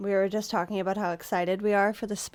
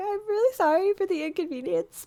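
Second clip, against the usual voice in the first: put-on pleading, begging baby voice, higher pitched; 11 semitones higher than usual. Imitating how they ask for a day off work: imitating own begging baby voice. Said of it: "how I talk when I ask for a day off".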